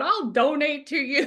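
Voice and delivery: weepy, sobbing, high, tearful crying voice. Retelling watching reels and promising a donation: imitating crying while talking. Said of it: "how many reels I watch crying, going".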